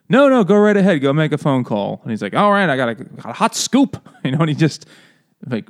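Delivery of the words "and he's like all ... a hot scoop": put-on 1930s gangster voice. Retelling a scene where a character calls in a scoop, in a 1930s gangster voice. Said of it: "like a 1930s gangster".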